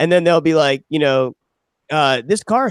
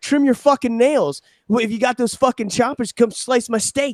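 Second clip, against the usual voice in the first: loud, put-on, hollering yelled rant; 9 semitones higher than usual. Retelling a commercial where the dad yells at his son: imitating someone yelling. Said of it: "yelling at him".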